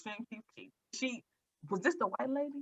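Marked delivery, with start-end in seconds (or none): 1.7-2.6 hushed whisper, higher and quieter. Asking the other speaker which lady from the show is meant: whispering. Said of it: "I don't know why I just whispered".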